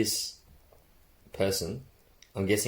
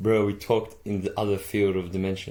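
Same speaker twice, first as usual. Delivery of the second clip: plain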